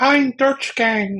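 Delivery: clumsy, bad, very high female voice. Recalling recording temp voices himself, in a bad female voice. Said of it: "me in a bad female voice going".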